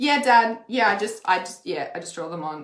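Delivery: sarcastic reply tone.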